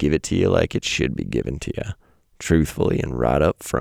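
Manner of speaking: put-on American cowboy accent. Speaker laying out his two options to listeners: cowboy accent. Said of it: "I don't know why I said that in a cowboy accent".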